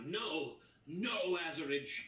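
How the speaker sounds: loud, desperate, anguished, despairing scream. Voicing a man shaken off his prize in a fight: NPC screaming in despair. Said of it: "he's screaming now".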